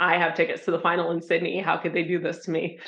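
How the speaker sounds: ordinary talk, nothing marked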